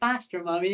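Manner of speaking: a bit fed up, weary, mock child voice. Retelling what Molly said during the race: imitating Molly sounding fed up. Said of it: "like she was sounding a bit fed up".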